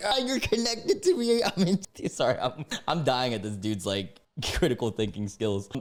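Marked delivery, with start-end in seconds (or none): 0.0-1.8 high, mocking singsong voice. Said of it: "It's like".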